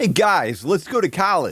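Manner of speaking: put-on non-Michigan accent, high and swooping. Joking about accents: put-on non-Michigan accent. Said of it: "That's my best non-Michigan accent".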